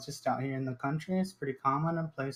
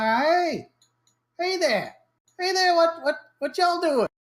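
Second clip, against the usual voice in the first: piercing, shrill, high-pitched voice; 6 dB louder than usual. Narrating a graveyard scene as a voice calls out to you: shrill voice. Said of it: "you hear a kind of shrill voice, and he says".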